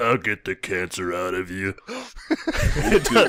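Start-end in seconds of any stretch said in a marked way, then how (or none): 0.0-1.7 put-on voice, very deep, much lower than usual. Trying the impression in turn, the speaker does a Michael Clarke Duncan deep voice. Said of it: "it doesn't sound like him at all".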